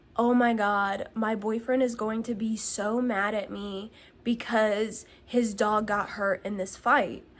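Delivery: ordinary talk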